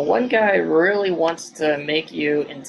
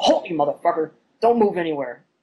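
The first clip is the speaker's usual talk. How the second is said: growled, threatening voice. Voicing one of two armed strangers who spot Ernest, growled threat. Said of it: "just sort of growls and goes".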